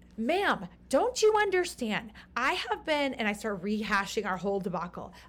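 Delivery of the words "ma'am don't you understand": acted angry screaming, much higher, louder. Retelling a travel debacle, the speaker re-enacts screaming at a woman: retelling a scream. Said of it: "I finally start screaming".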